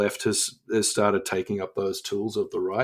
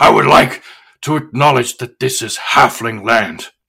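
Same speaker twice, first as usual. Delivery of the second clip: very loud, booming, bellowing orc voice; 2 semitones higher, 12 dB louder than usual. Speaker retells repeating back an acknowledgement of country at an introduction, orc voice. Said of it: "but in the voice of an orc".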